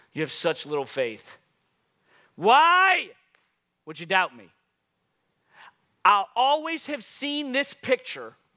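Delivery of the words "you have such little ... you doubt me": put-on exasperated, frustrated, angry scolding, swooping voice. Acting out how Jesus said a scripture line to Peter, imitating Jesus frustrated and angry. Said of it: "I've always thought Jesus was saying it like this. ... frustrated and angry at Peter".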